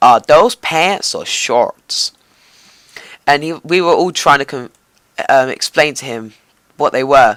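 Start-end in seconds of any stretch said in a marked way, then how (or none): 0.0-2.1 really strong, slow, drawn-out, put-on American accent. Retelling what a waiter asked, the speaker does it in an American accent. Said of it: "in a really like American accent".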